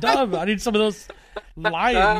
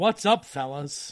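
plain

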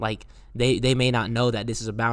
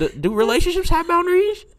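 put-on dumb voice, much higher, louder; 5 dB louder than usual. Asking co-hosts a question, slipping into a silly dumb voice. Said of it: "why you always put that one little voice on".

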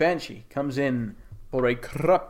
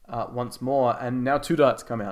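ordinary talk, nothing marked

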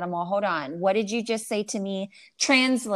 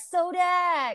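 acted-out, very high, excited voice; 10 semitones higher than usual. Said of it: "and you're like".

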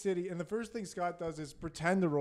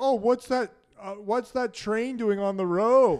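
put-on clueless tourist voice; 4 semitones higher, 8 dB louder than usual. Retelling how Scott pretended to be a tourist while driving: imitating Scott playing a tourist. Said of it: "You're pretending to be a tourist still".

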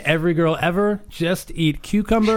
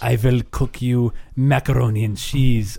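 clumsy fake Russian accent, dropped low; 6 semitones lower than usual. Asked to do the russian girl, answering in a bad russian accent. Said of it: "What about your Russian girl?".

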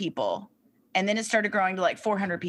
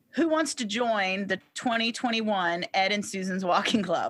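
normal talking voice

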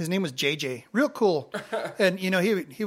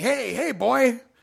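mock coach-style hollering, high and rough; 7 semitones higher, 4 dB louder than usual. Retelling how another coach called after him outside the gym: retelling a coach's yell. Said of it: "he's yelling at me".

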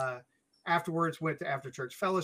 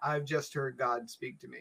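usual speaking voice

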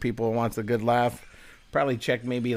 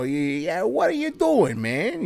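put-on thick New York accent, laid on heavily, animated; 7 semitones higher than usual. Describing an actor's line in a movie trailer, in a thick New York accent. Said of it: "like he's got a thick New York accent".

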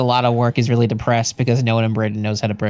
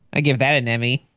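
normal talking voice

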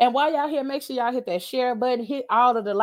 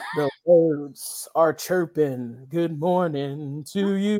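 put-on gruff morning voice, lower pitch; 8 semitones lower than usual. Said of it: "Sound just like Batman in the morning".

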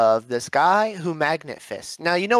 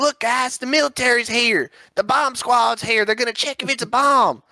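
put-on country accent, pitched high; 10 semitones higher than usual. Speaker making fun of a magnet fisherman: mock country accent. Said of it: "Is he country".

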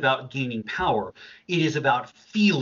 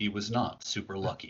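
quiet storyteller narrator voice; 4 semitones lower, 8 dB quieter than usual. Cut into the other speaker's talk about finding gold with a comment in a narrator's voice. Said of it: "Narrator's voice".

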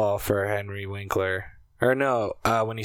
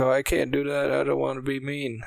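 goofy, high-pitched character voice; 5 semitones higher than usual. Retelling a scene with Henry Winkler, doing a Waterboy impression. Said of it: "that's my fucking water boy impression".

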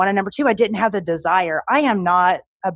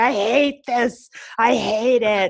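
very slow, drawn-out, tearful ugly-cry blubbering; 4 semitones higher than usual. Retelling nights coming home upset, imitating own ugly crying. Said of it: "I would go home ugly crying".

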